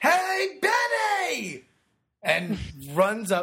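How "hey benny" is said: mock scream, much higher. Telling a story, voicing a companion calling out to benny, retelling a scream. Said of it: "the companion screams".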